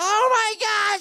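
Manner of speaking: very high, loud screaming shriek. Retelling her reaction when handed the mirror: imitating someone screaming. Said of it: "she's screaming".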